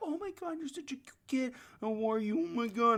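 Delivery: put-on very high, doting, gushing baby talk. Imitating people who gush at a child: imitating baby talk to a child. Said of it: "I don't even talk to children that way".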